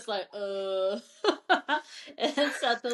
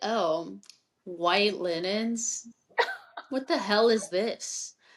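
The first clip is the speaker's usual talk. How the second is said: put-on sassy delivery. Retelling a scene from a book, quoting a character: imitating a sassy remark. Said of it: "how sassy is freaking Setos".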